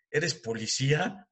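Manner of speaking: snide, mocking, sarcastic tone. Retelling what a teacher asked on first sight: imitating a sarcastic question. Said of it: "me dice muy sarcásticamente".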